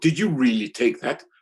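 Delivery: put-on sarcastic voice. Retelling how an editor doubted the photo: imitating a sarcastic editor. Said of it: "some sarcastic editor say".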